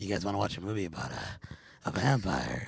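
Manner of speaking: slow, creepy, unsettling voice. Imitating a stranger inviting them to a vampire movie, in a scary way. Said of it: "the way you said it, he's all".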